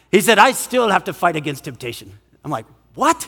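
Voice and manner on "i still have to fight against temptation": put-on Scottish accent, much lower pitch. Retelling what an 80-year-old man said, in a Scottish accent. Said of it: "this is a great Scottish accent".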